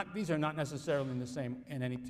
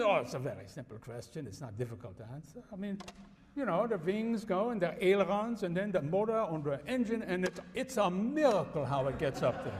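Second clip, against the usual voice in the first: funny, put-on comic stage-German accent; 4 semitones higher than usual. Retelling a TV professor's silly answer: imitating a comic German accent. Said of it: "in his comic German accent".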